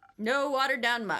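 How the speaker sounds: put-on Southern drawl. Reading a game character's line aloud: southern accent. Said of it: "I'm gonna make her Southern".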